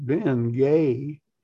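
slow southern drawl, word drawn out southern-style. Retelling a stranger saying your name from behind: southern drawl imitating Zig Ziglar. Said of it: "this southern drawl said".

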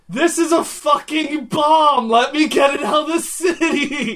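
very high, very loud, drawn-out scream. Voicing a character warning guards at a gate: screaming in character. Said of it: "I scream to them".

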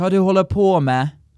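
Bergen dialect of Norwegian. Showing the same sentence as people in Bergen say it: Bergen dialect. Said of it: "And they would say".

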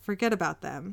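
normal talking voice

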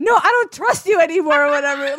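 full-blown, loud, panicked freaking-out outburst. Retelling how Diana reacted when Kenny said to open her eyes: imitating Diana freaking out. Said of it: "she's freaking out".

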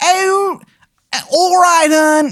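very high-pitched bad Maryland accent. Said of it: "it is a bad accent".

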